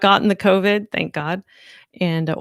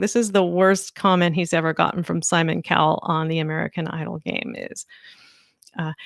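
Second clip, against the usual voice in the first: plain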